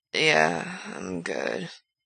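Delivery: slow, drawn out, soft and slightly slurred. Narrating a story, voice Frank's reply: slow and a little slurred. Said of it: "slow and a little slurred".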